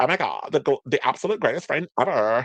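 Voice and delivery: heavy croaking vocal fry through all the words. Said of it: "they're speaking with that Kardashian vocal fry".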